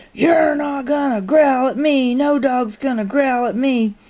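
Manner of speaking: enraged, furious, high-pitched ranting scream. Retelling how a man screamed at a growling dog, retelling a furious screaming rage. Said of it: "goes into a horrible rage and starts screaming".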